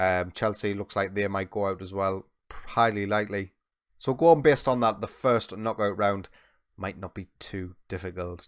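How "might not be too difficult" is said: quiet, much softer, hushed voice. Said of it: "Let's say that quietly so Football Manager gods don't hear us".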